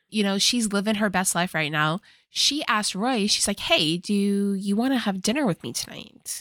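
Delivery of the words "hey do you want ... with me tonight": ordinary delivery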